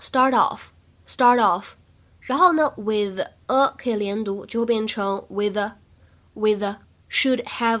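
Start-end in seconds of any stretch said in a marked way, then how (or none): 0.0-1.7 "start" linked into "off", faster. Demonstrating linked pronunciation for English learners, linked 'start off'. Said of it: "首先我们注意一下asked 当中呢可以有一个完全失去爆破的现象".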